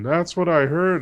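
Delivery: completely plastered voice. Voicing a plastered stranger telling a player of a reward: completely plastered voice. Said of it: "he's completely plastered".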